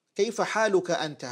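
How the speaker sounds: plain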